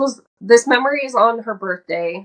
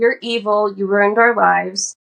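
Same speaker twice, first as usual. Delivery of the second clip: ordinary delivery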